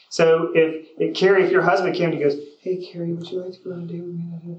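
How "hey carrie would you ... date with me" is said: soft, low-energy, flat delivery. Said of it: "but your energy's low".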